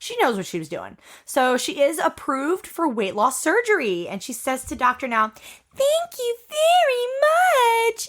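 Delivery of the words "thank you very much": put-on very high, slow, drawn-out babyish voice. Retelling how a patient thanked the doctor; imitating an even babier voice. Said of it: "more babyer voice".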